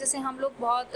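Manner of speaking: plain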